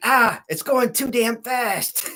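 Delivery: mock fed-up, irritated, high, drawn-out frustrated voice. Retelling reading a comic strip that went too fast: retelling being mad. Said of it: "That damn thing was making me mad".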